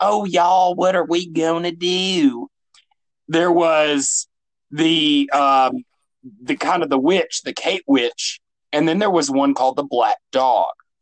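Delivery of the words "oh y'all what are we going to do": put-on small ghost girl voice, drawn-out do. Describing a ghost that talks like a little girl: imitating a little girl ghost. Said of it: "a little girl that kinda, like, was like".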